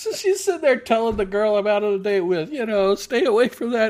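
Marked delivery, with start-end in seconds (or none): 2.9-3.9 put-on woman's scream, higher and louder. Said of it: "she literally screaming it".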